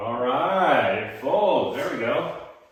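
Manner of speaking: quietly thrilled, soft, pleased, relieved. Watching a workbench tabletop fold correctly, sounding excited. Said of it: "I sound a little more excited".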